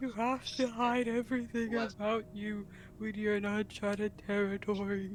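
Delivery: barely audible, very soft, eerie ghost voice. Voicing a character the others say sounds like a ghost, in a ghostly voice. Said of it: "you sound like you're trying to be a ghost".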